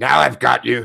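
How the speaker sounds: distorted, mangled, garbled speech. Narrating a voice calling out from the darkness, strange garbled voice. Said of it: "garbled voice that says".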